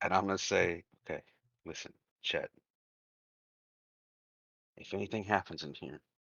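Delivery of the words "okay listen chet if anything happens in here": put-on whisper, quieter. Showing another character a hidden Derringer in secret: whispering in character. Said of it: "I'm gonna whisper to Chet again".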